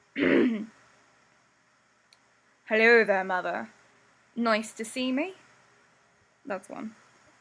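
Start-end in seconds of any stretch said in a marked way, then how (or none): 0.1-5.3 put-on thick male voice. Doing a character's voice after asking how it should sound: put-on Sebastian voice. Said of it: "now how's his voice?".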